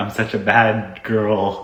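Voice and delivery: slow, drawn-out voice. Retelling what the husband would say while dressed up: imitating the husband. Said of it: "and he'd be like".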